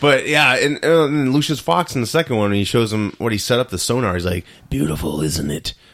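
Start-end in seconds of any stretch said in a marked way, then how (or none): 4.7-5.7 put-on heavy chain-smoker's voice. Retelling Batman's line to Lucius Fox: Batman smoker voice. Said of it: "I'm not gonna talk to a smoking voice guy".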